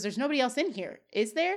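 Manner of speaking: ordinary delivery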